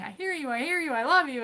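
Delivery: mock emphatic, high, screamed delivery. Retelling an argument with a sixteen-year-old: imitating own screaming. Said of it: "and I'm screaming".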